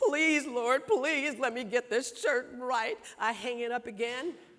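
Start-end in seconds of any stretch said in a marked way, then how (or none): 0.0-3.0 crying, tearful, begging plea. Retelling a plea made while ironing a shirt: retelling own crying plea. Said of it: "By this time, I'm crying".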